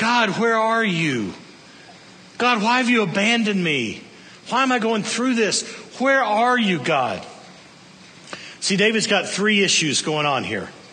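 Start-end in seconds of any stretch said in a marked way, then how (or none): 0.0-7.3 desperate, anguished, pleading cry. A speaker retelling David's cry to God, acting out David's anguish. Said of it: "Can you hear the anguish in David's voice?".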